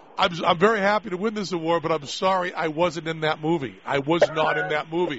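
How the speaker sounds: ordinary talk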